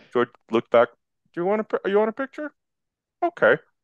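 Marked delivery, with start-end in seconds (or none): 1.3-3.5 very high-pitched, unassuming, humble stammer. Retelling asking George Lucas for a picture: soft-spoken George Lucas voice.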